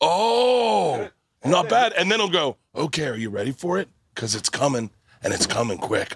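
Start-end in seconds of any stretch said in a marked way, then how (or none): 2.7-6.2 put-on flirty, suggestive voice. Retelling an Instagram arm wrestler's talk to opponents: imitating the Arm Wrestling Whisperer's dirty talk. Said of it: "He dirty talks them".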